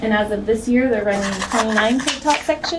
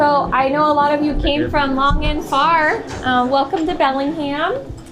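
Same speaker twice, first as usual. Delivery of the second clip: raised, higher teacher voice, projecting. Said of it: "my best teacher projection voice".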